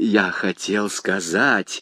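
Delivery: mumbled, very low voice. Bonacieux answers the commissioner, noticing his reply went wrong; muttering. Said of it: "пробормотал Бонасье".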